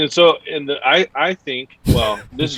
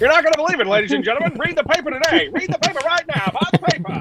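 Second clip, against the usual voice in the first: put-on old-timey 1940s gangster voice, higher; 14 semitones higher than usual. Joking about an old-timey newspaper seller: forties gangster voice. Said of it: "Like a forties gangster".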